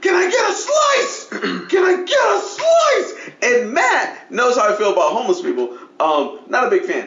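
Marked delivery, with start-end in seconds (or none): 0.0-3.1 mock shrill, very high, drawn-out, repeated yelling. Retelling what a homeless man kept yelling, imitating his yell. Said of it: "He's just yelling".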